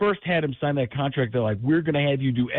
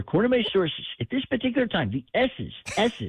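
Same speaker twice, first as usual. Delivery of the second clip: pitch pushed up, s sounds worked hard; 6 semitones higher than usual. Showing an impression of Schefter, who reports news: Adam Schefter voice. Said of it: "when I do the Schefter".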